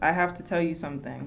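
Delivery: plain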